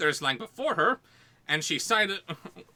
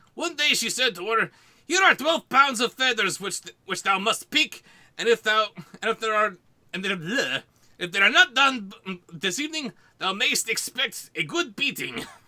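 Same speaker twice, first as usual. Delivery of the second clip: heavy Mexican accent, laid on very thick; 4 semitones higher, 3 dB louder than usual. Reading an old English story aloud, in a heavy Mexican accent. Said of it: "Ye old English spoken in a heavy Mexican accent".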